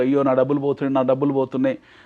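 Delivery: ordinary delivery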